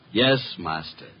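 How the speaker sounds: sarcastic, impertinent tone. Answering the one he calls master when his name is called: sarcastic. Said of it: "Just a little less sarcasm".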